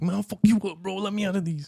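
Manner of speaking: very high, squeaky tough-guy bluster. Imitating a partner acting tough while handcuffed: imitating partner acting tough. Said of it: "I act tough with you".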